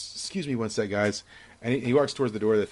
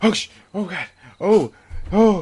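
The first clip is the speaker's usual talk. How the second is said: put-on heavy panting, much higher pitch; 9 semitones higher, 9 dB louder than usual. Retelling how a man comes back and starts pushing away, acting out heavy breathing. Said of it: "He's, like, breathing really hard".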